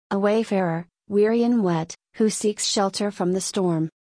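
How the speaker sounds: ordinary delivery, nothing marked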